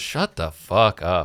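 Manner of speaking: grumbling, muttered aside. Retelling how a man at the gym finally snapped: retold muttering under breath. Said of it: "under his breath".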